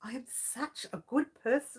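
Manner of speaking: hushed, soft words breaking into giggles. Speaker complains to their audience about how they are treated, laughing while talking. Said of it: "I can't even say that without laughing".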